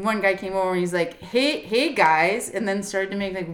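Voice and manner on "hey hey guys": put-on tipsy, drunken voice calling out. Retelling how a drunk man came over: imitating a drunk man. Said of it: "the Canadians were also very drunk".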